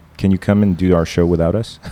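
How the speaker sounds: ordinary delivery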